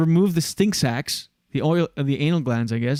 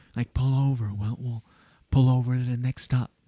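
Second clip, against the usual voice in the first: harsh, hissed, aggressive, angry half-whisper; 3 semitones lower, 4 dB quieter than usual. Speaker demonstrating the half-whisper used at drivers through closed car windows: aggressive half-whisper. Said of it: "it's the same whisper that you use when you're in traffic".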